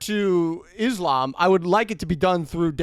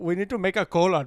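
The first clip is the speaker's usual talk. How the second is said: put-on, mocking Indian accent; 4 dB quieter than usual. Joking about a cola brand's name, acting out its makers: put-on Indian accent. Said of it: "I can't do an Indian voice".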